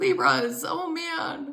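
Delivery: cracking voice, high and very drawn out. Doing a reading for Libras, voice cracking. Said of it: "you hear my throat now cracking?".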